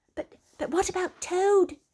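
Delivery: very high, fretful, anxious, stumbling voice. Narrator reading the Mole's question as they set off, anxious. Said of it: "asked the Mole anxiously".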